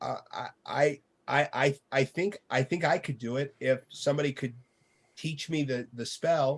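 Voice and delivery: nervous stuttering voice. Voicing a character who walks slowly to the front: hesitant timid stammer. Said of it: "raises his hand and kinda walks slowly to the front and says".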